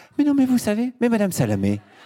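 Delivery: slipping up into gentle head voice. Imitating Emmanuel Macron trying to soften people: Emmanuel Macron, tender falsetto. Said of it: "il fait ça".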